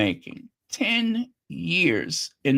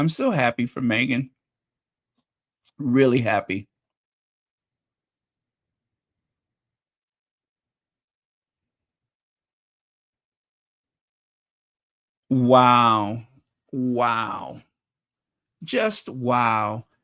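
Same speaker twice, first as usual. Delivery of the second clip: touched, emotional gushing, drawn-out wows; 3 semitones lower than usual. Speaker reacting to footage from a night they missed, getting emotional. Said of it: "I'm getting emotional".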